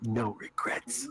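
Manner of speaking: whispering quietly under the breath. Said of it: "As he whispers to himself".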